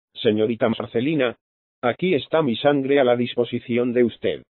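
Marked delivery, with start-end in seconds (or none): none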